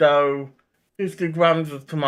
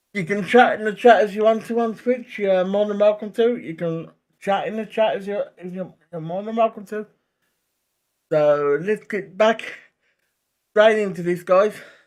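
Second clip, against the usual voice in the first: breathless, winded, gulping air between words; 4 semitones higher than usual. Streamer welcoming people in the Twitch chat, out of breath. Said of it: "I'm a bit out of breath there".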